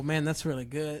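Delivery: flat deadpan delivery. Recounting his reply to a man punching the air, retelling a deadpan line. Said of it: "I deadpan".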